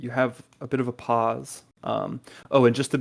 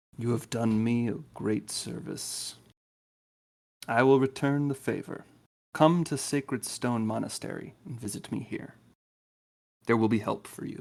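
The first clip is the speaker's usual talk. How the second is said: soft, thin, hollow, wispy voice; 6 dB quieter than usual. Narrating to players, voicing a voice they hear in their mind: wispy, hollow voice. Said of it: "this like wispy".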